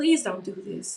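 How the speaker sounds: put-on, desperate, high, pleading begging voice. Retelling a plea to armed men: retelling own begging. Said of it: "I just kept begging".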